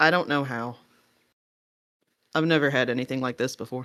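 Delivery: awkward, sheepish, embarrassed tone. Voicing a character who looks at a companion holding a necklace: sheepish. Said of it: "kind of sheepishly".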